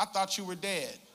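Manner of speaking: acted-out, light, tossed-off teasing joking tone. Retelling what someone they knew said on seeing them, retelling a joking remark.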